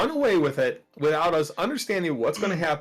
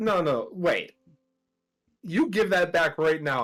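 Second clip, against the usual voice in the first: ominous, menacing, threatening tone. In a tabletop game, a player's character demands something back from her; menacing. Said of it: "I say it menacingly to her".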